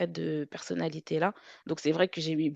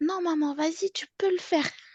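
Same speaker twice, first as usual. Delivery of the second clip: put-on tiny, very high-pitched little kid's voice; 12 semitones higher than usual. A mother recalls her child encouraging her from the back seat, in a small child's voice. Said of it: "j'entends une petite voix derrière".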